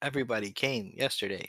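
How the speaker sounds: monotone, expressionless, flat deadpan delivery. Retelling a line from an episode: imitating a deadpan voice. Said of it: "it had the deadpan voice too".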